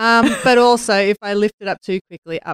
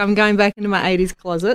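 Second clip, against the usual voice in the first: ordinary delivery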